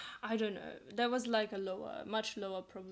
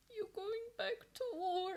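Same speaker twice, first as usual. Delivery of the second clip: high, put-on tearful voice with words through sobs; 11 semitones higher, 3 dB quieter than usual. Retelling what a sister said on hearing the speaker would go back: imitating sister crying. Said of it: "and she also starts crying".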